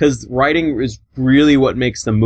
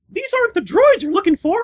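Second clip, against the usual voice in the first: very high-pitched cartoon mouse voice. Trying a Star Wars line after another speaker asks: Mickey Mouse voice. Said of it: "I wish I could do a Mickey Mouse".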